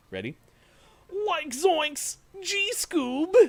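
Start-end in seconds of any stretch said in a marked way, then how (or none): 1.3-3.3 very high, very slow, loud, drawn-out goofy cartoon voice. Doing a promised impression for a streamer friend: Shaggy impression. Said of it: "I told him I could do a Shaggy and a Scooby".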